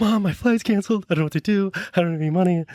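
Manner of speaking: mock weepy, high tearful crying voice through tears. Retelling a call to Mom about a canceled flight: imitating own past crying. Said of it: "again, crying".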